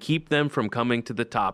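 ordinary delivery

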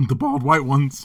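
voice cracks on "bald". Joking with the others, voice cracking on "bald". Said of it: "My voice cracked when I said bald".

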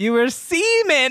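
high, slow mock prospector drawl.

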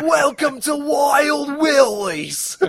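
loud, high, exaggerated Australian accent, "wild" stretched out. Quoting a woman from a movie they are discussing: over-exaggerated Steve Irwin accent. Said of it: "She sounded like an over-exaggerated Steve Irwin".

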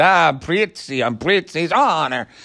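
bad put-on Italian accent. Mocking an actor's performance in a film, Jack Nicholson doing an Italian accent. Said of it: "he's doing an accent".

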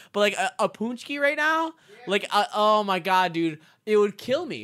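giggling through the words. Still amused by what Scott said, the speaker keeps talking; laughing while talking. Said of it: "I'm laughing because I heard Scott".

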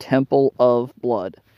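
odd, heavy emphasis placed on the word "of". Naming a publishing arm with deliberately odd stress: strong stress on of. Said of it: "you may be wondering why I put the weird emphasis on the word of".

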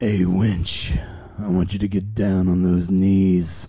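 attempted seductive, sexy delivery. In a pirate role-play, asked to make it sexy, trying to sound sexy. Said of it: "Is it going to go sexy at some point?".

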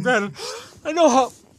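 high, loud words stretched through a yawn. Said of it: "I'm yawning".

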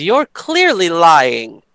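mildly irritated, annoyed, accusing tone. Speaking as Desiree, accusing a halfling of lying: pissed accusation. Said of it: "Desiree's a little pissed right now and says".

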